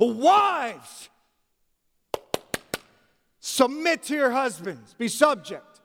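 furious, high, swooping shout with "wives" drawn out. Speaker asks whether Peter yelled his instruction with anger: mock-angry yelling as Peter. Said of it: "Is Peter yelling with anger?".

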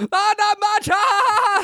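play-acted, very high, stretched shout over loud noise. Retelling a kid answering a teacher over spraying soda: imitating someone yelling over noise. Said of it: "yell over".

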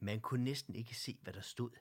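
ordinary delivery

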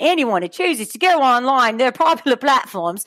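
put-on failed Aussie accent drifting British. Speaker who says they can't do Australian tries it anyway, bad Australian accent. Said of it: "it turns into British".

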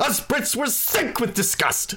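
very high, loud, boisterous voice. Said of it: "It's just very boisterous".

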